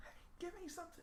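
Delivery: soft, high whispering. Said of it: "you have to ask them".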